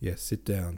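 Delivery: plain reading voice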